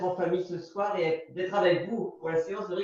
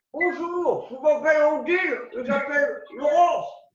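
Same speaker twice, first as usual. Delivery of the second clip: high, loud speech as through a mouthful of hot potato; 8 semitones higher, 7 dB louder than usual. Playing a fast name game exercise, talking with a hot potato in mouth. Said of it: "avec une patate chaude dans la bouche".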